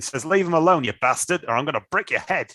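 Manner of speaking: attempted put-on Australian accent. Guessing how a man would respond, voicing him in a put-on Australian accent. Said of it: "let's try and do it in an Australian accent".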